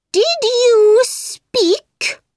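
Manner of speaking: very high, pompous, self-important mouse voice. Narrator reading a story, the mouse questioning the parrot, in an important voice. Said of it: "Asked the mouse in an important voice".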